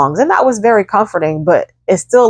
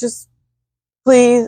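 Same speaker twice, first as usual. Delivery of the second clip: mock crying, tearful, pleading tone, pitched up; 6 semitones higher than usual. Retelling a plea to get another person to draw blood: retelling own crying plea. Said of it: "was busting out crying".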